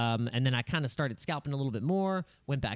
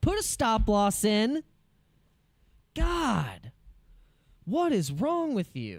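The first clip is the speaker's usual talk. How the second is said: high, swooping yell with God drawn out; 8 semitones higher than usual. Speaker tells viewers they're yelling at themself, not at them: yelling at oneself. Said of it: "I'm yelling at myself".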